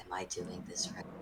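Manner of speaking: hushed, very quiet whisper, barely there. Leaning toward Graham, a character asks him a question in a quiet whisper. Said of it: "just quietly whispers".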